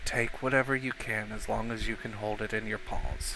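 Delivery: hushed, soft half-whisper, right at the ear. He leans down, hugs you tight and speaks into your ear, half-whispering. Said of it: "just whispers in your ear".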